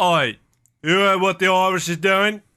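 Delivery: put-on English accent. Joking about Irish independence, acting out the British side: English accent. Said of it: "It's really accent. Good".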